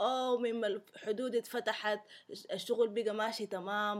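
put-on strong South Sudanese accent. Retelling a video character's phone call: imitating a strong South Sudanese accent. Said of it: "in a very strong South Sudanese accent".

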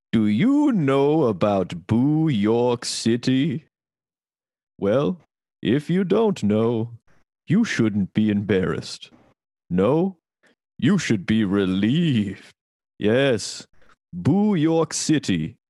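spooky, slightly funny put-on storytelling voice. Starting to read a text about Boo York City, put-on scary voice. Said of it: "I have to read it in a sort of funny voice. Like a scary voice".

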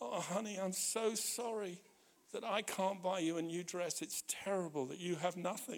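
play-acted very soft, quiet, tearful crying voice. Retelling a friend's apology to his partner: imitating someone crying. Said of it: "And he started to cry and he said".

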